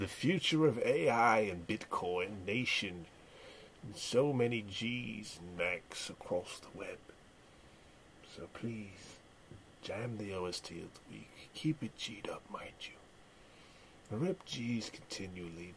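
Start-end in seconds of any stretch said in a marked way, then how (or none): 8.4-15.7 soft, hushed whisper. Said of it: "I don't know why I'm talking like this".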